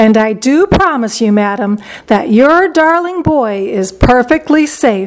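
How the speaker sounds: ordinary delivery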